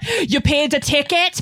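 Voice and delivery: thick, heavily laid-on Scottish accent.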